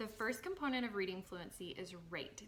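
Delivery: normal talking voice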